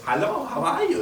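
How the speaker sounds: high-pitched mock German accent.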